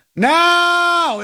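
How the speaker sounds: high-pitched, punchy mock yell.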